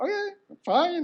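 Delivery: very high, reluctant, giving-in tone.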